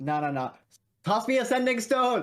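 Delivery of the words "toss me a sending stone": very high rising yell, hurried and breathless. Sprinting after a fleeing companion in character: yelling while running. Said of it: "I'm yelling as I'm running".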